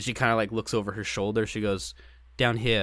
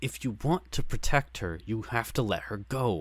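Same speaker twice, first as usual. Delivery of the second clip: mimicked speech through gritted teeth, slower. Recapping a scene, the speaker acts out a character's line through gritted teeth. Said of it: "through gritted teeth".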